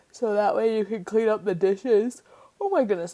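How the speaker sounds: yawning while talking. Speaker describing a build to viewers at nine in the morning, yawning. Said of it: "I'm sorry I'm yawning".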